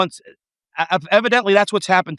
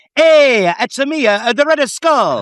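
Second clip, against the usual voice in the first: slow, put-on Italian accent, pitched up; 6 semitones higher, 4 dB louder than usual. Joking that the Red Skull is Italian: put-on Italian accent. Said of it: "he's Italian, he's Italian".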